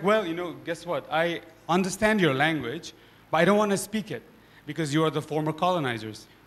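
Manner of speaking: plain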